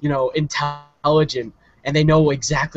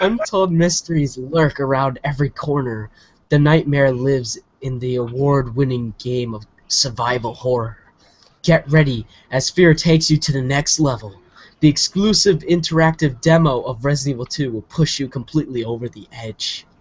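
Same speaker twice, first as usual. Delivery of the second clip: lightly suggestive, sensual voice, trailer-announcer style read. Reading a game demo advertisement aloud: slightly sexual voice. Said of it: "why you were doing a slightly sexual voice".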